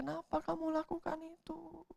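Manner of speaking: quiet, high, soft pleading.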